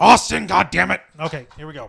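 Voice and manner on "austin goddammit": put-on wrestling promoter voice, louder. Trying out an imitation before reading a statement: Vince McMahon voice. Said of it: "my best Vince McMahon voice".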